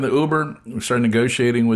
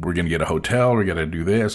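normal talking voice

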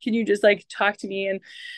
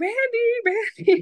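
very high, stretched-out, drawn-out calling scream; 13 semitones higher than usual. Recounting labor at home, screaming for her husband downstairs, retelling a scream. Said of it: "I'm screaming".

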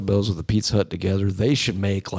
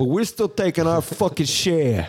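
put-on gangster tough-guy voice, higher; 9 semitones higher than usual. Acting out mafia guys demanding money to let someone play: imitating how mafia guys talk. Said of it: "that's what mafia dudes talk like".

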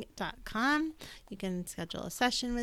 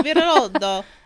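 fake Italian accent, louder; 2 semitones higher, 14 dB louder than usual. Reading out an author's name from a card deck: put-on italian accent. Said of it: "But I've switched to Italian".

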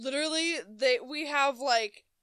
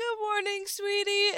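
put-on high-pitched, tiny little old man voice; 9 semitones higher than usual. Speaker imitates a man who came in while they were working, little old man voice. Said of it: "in his little old man voice".

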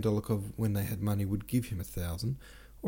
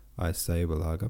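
ordinary delivery, nothing marked

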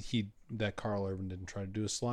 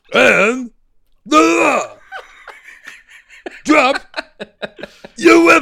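very loud, high, slow bellowing; 20 dB louder than usual. Showing how the comics sound read in Sylvester Stallone's voice. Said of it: "I read it in Sylvester Stallone's voice".

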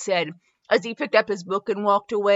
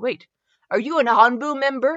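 ordinary delivery

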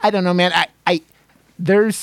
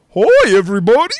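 loud, high, zany morning-show co-host voice; 5 semitones higher, 6 dB louder than usual. Mocking how streamers and podcasters greet viewers, wacky morning-show co-host voice. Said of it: "morning show wacky co-host voice".

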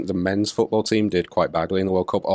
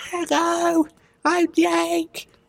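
put-on very high, unbroken boyish voice. Describing how his voice used to sound, he imitates his younger voice. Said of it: "my voice was like".

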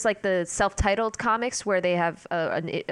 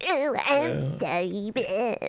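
put-on weaselly voice, quieter; 2 semitones higher than usual. When the Hutt comes up in conversation, break into a Ziro the Hutt impression. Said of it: "That's my impression of that little weasel".

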